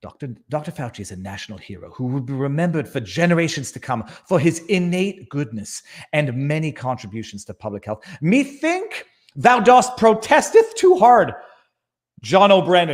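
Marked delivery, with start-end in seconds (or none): 0.0-8.0 hushed, quiet golf broadcast announcer delivery. Saying a statement after announcing he will do the golfing voice: golf commentator voice. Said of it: "I'll do the golfing voice".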